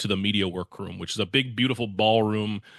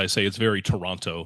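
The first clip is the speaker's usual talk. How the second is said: ordinary talk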